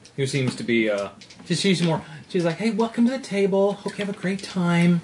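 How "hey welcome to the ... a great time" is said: put-on sweet, kindly, gentle old lady voice. Voicing a sweet old lady dealer welcoming a player: sweet old lady voice. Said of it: "this sweet old lady dealer".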